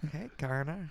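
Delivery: eerie cartoonish father voice. Greeting another speaker while pretending to be Peter Griffin: Peter Griffin voice. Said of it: "we got Peter".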